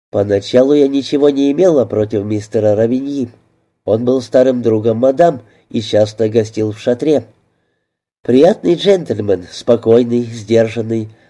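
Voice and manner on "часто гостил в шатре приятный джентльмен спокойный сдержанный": ordinary delivery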